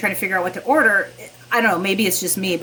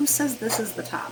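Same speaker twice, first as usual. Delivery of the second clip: acted dry, succinct matter-of-fact deadpan, plain and soft; 3 semitones higher, 8 dB quieter than usual. Speaker quoting a woman's reply to the worries being thrown at her: imitating a matter-of-fact deadpan. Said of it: "so succinct and so matter of like deadpan".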